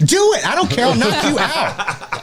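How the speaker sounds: acted angry voice, very high, swooping, drawn-out. Retelling own reply to a nephew at dinner: imitating own angry reply. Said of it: "unreasonably mad".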